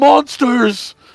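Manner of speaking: high, strange, shrill, loud altered yelling voice. Hap shouts through the wolf to scare them more: shouted in a different voice. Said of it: "just Hap just shouts in a different voice".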